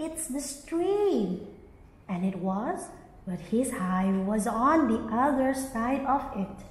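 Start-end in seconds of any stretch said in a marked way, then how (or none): 0.0-1.5 eager, high, swooping excited cry. Narrator reads the greedy bee crying out: excited cry. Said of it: "cried the greedy bee excitedly".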